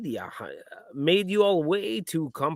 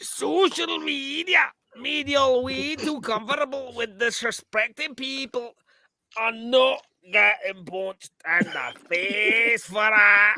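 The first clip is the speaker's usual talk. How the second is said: put-on Scottish character voice; 5 semitones higher, 4 dB louder than usual. After a co-host suggests going Fat Bastard, addressing everyone in Fat Bastard voice. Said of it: "just go fat bastard".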